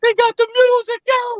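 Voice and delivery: very high, squeaky put-on falsetto. Retelling how a clownish guy announced the music, in high falsetto voice. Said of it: "he would say it in like a falsetto voice".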